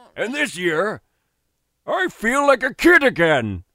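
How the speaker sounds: put-on old man voice. Delivering a line as others tease the delivery: old man voice. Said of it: "you sound like an old f***ing man".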